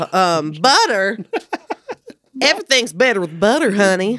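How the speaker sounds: imitated Southern accent. Told by another speaker they'd do a great one: Paula Deen impression. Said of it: "You could do an amazing Paula Deen".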